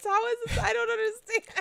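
very high, loud, baffled, incredulous tone.

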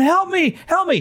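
very high, drawn-out, stretched screaming. Retelling a game moment, quoting a woman on a horse, imitating a woman screaming. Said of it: "she's screaming".

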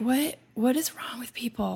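acted mumbling. Speaker retelling reacting to a person settling in beside them, retelling mumbling under breath. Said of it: "I'm like mumbling under my breath".

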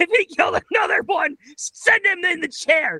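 put-on tearful anger.

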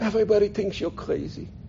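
tiny, soft, crackly little voice. Retelling what Aunt Fanny said to him as he got closer, little crackly voice. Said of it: "she said to me with her little crackly voice".

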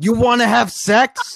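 very high, shrill, loud scream. With all the windows rolled down, retelling screaming at a sign: retelling a scream. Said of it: "and I just scream".

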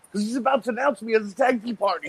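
delighted beaming voice. Imagining Eddie answering Terry Taylor: imitating Eddie, really happy. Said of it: "really happy about it".

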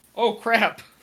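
startled and shocked. Reacting as Wilhelm to the door being kicked in: shocked. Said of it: "Wilhelm is shocked".

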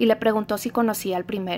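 ordinary delivery, nothing marked

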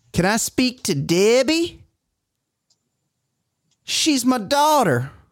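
bad, put-on, very high-pitched, horrible Southern accent. Recalling someone's movie scene, spoken in a horrible southern accent. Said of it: "That's just a horrible Southern accent".

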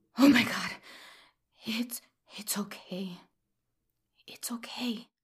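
hushed, soft, soothing whisper, pitched high. Hugging his trembling son found behind the curtain, whispered. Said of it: "I whispered as I hugged him".

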